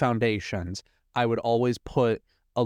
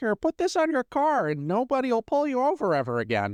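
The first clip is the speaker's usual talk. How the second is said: very high, sing-song voice with big pitch swings; 13 semitones higher than usual. Retelling a cartoon scene where Lenny hands over a sticker: imitating Lenny. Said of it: "you literally sounded like him".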